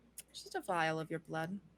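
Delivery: hushed, very low, very quiet undertone. Voicing a character naming her price: speaking very low. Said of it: "she's speaking very low".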